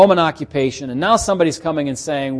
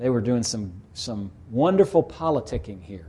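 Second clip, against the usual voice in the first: mocking, tongue-in-cheek, sarcastic, facetious delivery; 4 semitones lower, 7 dB quieter than usual. Describing men of God who dodged a question: sarcastic. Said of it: "I'm speaking facetiously, sarcastically".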